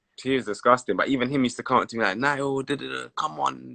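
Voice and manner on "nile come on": put-on French accent, much slower and quieter. Retelling how a fellow player used to urge the speaker, Ben Arfa French accent. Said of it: "like in his French accent".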